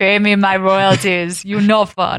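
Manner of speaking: bad, poor put-on Austrian accent. Joking about royalties in a put-on voice: bad Austrian accent. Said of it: "I can't even do an Austrian accent".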